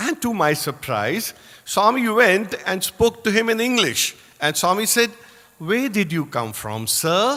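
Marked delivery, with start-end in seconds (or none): 5.6-7.4 swooping sing-song, each word rising and falling. Retelling what Swami asked a boy: Swami's sing-song tone. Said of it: "in that beautiful sing-song tone of his".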